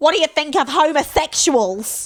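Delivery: sudden blurted shout. Recapping a moment meant to be tactful, imitating Beck shouting. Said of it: "And then Beck just shouts".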